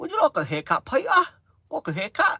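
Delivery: very high, swooping, sing-song English barber voice. Speaker takes off the English barber who does haircuts: English barber impression. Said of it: "I can take um me English um barber off".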